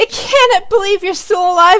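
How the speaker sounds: piercing gleeful shriek, very high and loud. Voicing her as the others open the door and ready spells, shrieking gleefully. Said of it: "she shrieks gleefully".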